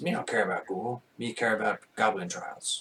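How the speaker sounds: goblin creature character voice. Game master voicing a character answering a player's question about the ghoul: goblin voice. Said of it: "that's what their voice".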